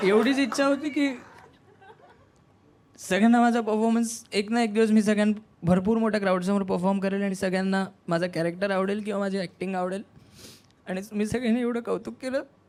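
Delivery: tearful speech, crying while talking. Answering others who ask why, crying while talking. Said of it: "रो क्यों रहे हो?".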